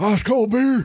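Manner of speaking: very high put-on wrestler voice. Doing an impression when asked, Stone Cold impression. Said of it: "That's really good".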